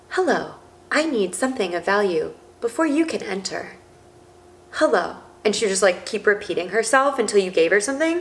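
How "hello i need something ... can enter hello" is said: mechanical, machine-like train conductor voice. Retelling what a dead train conductor said to her, robotic talking. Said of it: "like robotic talking like".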